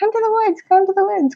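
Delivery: put-on very high, quick childlike little girl voice. Describing a voice she hears that has since grown up, little girl voice. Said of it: "kind of little girl voice".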